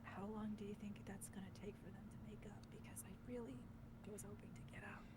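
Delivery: rapid, hushed whisper, barely audible. A player's character turns to a companion during the game, whispering. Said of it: "Raven whispers to Festus".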